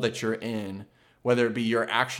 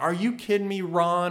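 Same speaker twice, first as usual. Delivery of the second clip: pitched-up, angry snapping tone; 7 semitones higher than usual. Retelling a scene, the speaker imitates a woman snapping at her husband. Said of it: "just snaps on her husband".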